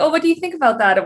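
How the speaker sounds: exaggerated Canadian accent. Imitating how she always asks questions: playing up Canadian accent. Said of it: "I always say, eh, when I ask a question".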